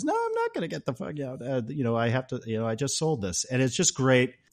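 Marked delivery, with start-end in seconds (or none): 0.0-1.4 ridiculous, exaggerated European accent, pitched up. Retelling an exchange between Serge and Axel, as Serge in ridiculous European accent. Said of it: "ridiculous like european accent".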